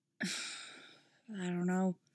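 murmured speech. Oliver answers Dinah after she asks what's wrong, murmuring. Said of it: "he murmurs back".

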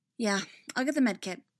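plain

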